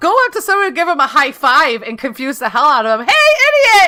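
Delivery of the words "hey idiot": loud, very high, fake all-excited voice. Suggesting a prank of high-fiving someone as a greeting, acting all excited. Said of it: "act all excited to see them".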